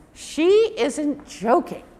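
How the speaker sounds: plain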